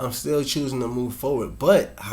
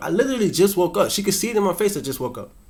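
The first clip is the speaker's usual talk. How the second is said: ordinary talk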